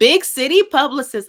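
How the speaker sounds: emphatic loud burst. Host addressing the guest in conversation, in a raised voice. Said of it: "I don't know why I raised my voice".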